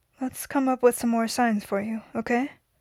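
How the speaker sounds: plain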